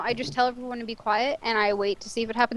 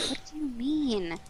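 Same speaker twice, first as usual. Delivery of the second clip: soft, hushed stage whisper; 8 dB quieter than usual. Turning around in character and replying to a voice: half-whisper. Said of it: "I kinda say it in a whisper in reply".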